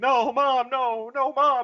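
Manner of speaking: very high, very slow, drawn-out pleading scream. Retelling a character screaming in his sleep: imitating Anakin screaming. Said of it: "he's just screaming".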